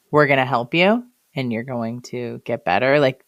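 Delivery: plain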